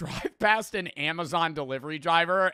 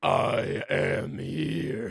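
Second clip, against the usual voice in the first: artificially deepened, demon-like put-on voice; 11 semitones lower than usual. Repeating a man's line while reacting to him: imitating a deepened voice. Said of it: "he's like deepening his voice".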